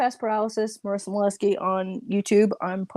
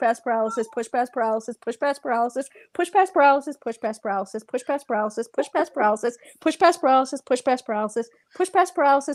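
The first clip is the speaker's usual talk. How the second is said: very fast, rattled-off, rapid-fire run of words; 3 semitones higher than usual. Taking a challenge to say a phrase five times fast, rapid tongue twister. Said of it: "say that five times fast".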